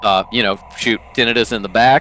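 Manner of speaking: ordinary delivery, nothing marked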